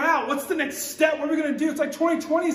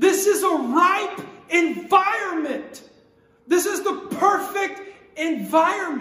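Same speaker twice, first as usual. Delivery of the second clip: slow, emphatic preaching, every word heavily weighted; 3 semitones higher than usual. A preacher back after a year away, speaking to listeners, yelling. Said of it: "I don't know why I'm yelling so much".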